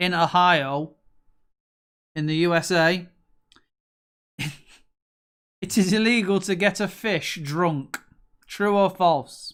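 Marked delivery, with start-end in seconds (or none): 0.0-8.0 put-on American accent throughout the delivery. Reading out a true-or-false question, in an American accent. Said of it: "the only way you can really say it is with an American accent".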